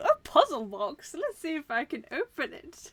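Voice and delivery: gleeful, thrilled, sing-song, drawn-out joyful delight. Retelling the game's reaction to finding a dead body: imitating joyful delivery. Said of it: "with such joy".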